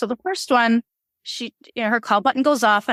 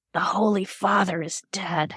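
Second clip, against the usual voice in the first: grave, hushed stage whisper; 3 semitones lower, 4 dB quieter than usual. Retelling what a nun said at night: imitating a half-whisper. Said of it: "She kinda whispered it like that".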